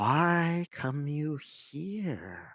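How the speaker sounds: soft-spoken sibilant hiss, drawn out. Game master voicing a voice the players hear in the entrance: soft, sibilant voice. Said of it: "you hear a sibilant voice whis- saying softly".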